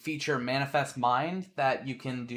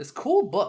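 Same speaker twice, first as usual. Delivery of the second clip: lively, energetic, very high-pitched voice; 9 semitones higher, 4 dB louder than usual. Narrating what the players hear, as a more energetic person. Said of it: "a more energetic person".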